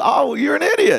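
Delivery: very high, playful, teasing joking tone. Retelling what a woman said to the speaker one morning, retelling a joking jab. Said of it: "And she was jokingly".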